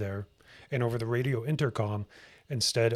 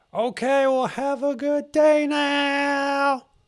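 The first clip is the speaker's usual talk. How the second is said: very high, very slow, drawn-out friendly yell; 8 dB louder than usual. Retelling a man calling out from behind as he has to go, retelling a friendly yell. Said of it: "yelling at me as if I'm a long lost friend".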